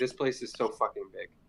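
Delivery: fed-up, frustrated, exasperated griping tone. Looking around a huge place with a large circular hole, speak frustrated. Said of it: "frustratedly say".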